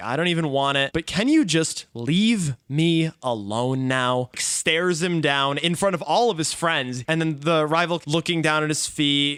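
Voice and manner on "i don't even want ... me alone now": ordinary delivery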